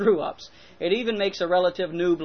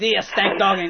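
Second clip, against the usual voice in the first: fake French accent laid over the voice; 4 dB louder than usual. Trying German words, then slipping into a put-on French accent. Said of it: "That was French".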